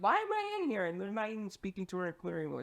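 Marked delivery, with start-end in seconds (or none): 0.0-0.9 put-on panicked plea, pitched very high. Retelling being held in an interrogation room: imitating mom panicking. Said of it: "And my mom's panicking".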